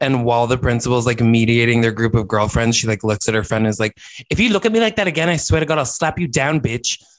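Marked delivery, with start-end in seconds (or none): 4.3-7.0 spot-on put-on schoolgirl accent, done well. Retelling a scene from a show, imitating the character: Ja'mie impression accent. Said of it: "That was an, an incredible accent".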